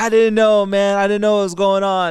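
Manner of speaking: loud, high-pitched protesting.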